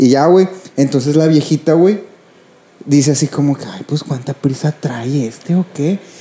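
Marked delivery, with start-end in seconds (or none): 3.6-6.0 mock muttering through teeth, under breath, much quieter. Retelling what an old woman said, muttering it through her teeth. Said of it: "entre dientes".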